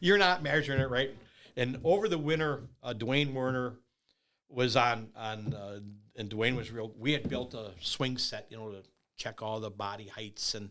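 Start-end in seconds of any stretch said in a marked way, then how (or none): 0.0-1.1 loud, hollered, shouting voice. Retelling complaints about measuring on opening day: imitating someone screaming. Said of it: "these guys are all screaming, hollering at me like".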